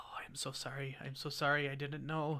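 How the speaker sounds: soft whispering. Voicing a farmer spreading stuff on a creature: whispering to himself. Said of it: "you can hear him whispering to himself".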